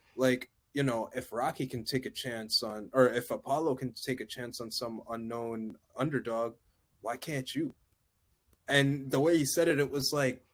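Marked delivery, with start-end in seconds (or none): none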